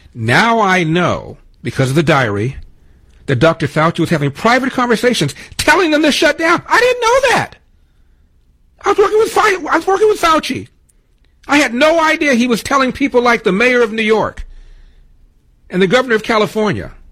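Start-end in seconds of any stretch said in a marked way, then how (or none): 6.7-16.9 raised voice, much higher pitch. Speaker talking while their engineer listens, in a raised voice. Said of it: "Am I raising my voice again".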